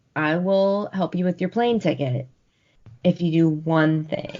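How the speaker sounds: ordinary talk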